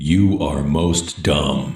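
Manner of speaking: all-knowing, all-seeing voice. Showing how a quoted line should be said: all-knowing, all-seeing voice. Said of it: "You gotta have that all-knowing, all-seeing voice".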